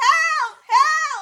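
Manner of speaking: shrill, very high, very loud screaming. Telling a story about dangling from a tree, retelling screaming for help. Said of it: "So I'm screaming".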